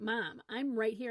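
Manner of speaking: mock-exasperated child voice. Mother retelling what her daughter finally said, imitating daughter's exasperation. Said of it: "she would say in exasperation".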